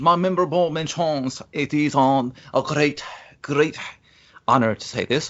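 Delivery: put-on fake comedy French accent. Marlon, asked for his five memorable mentions, answers in a fake French accent. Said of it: "What accent are you".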